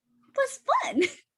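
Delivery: very high, tiny, squeaky chipmunk voice. Retelling answering friends about Harry Potter as a six-year-old, in a little chipmunk voice. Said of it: "just a little chipmunk voice".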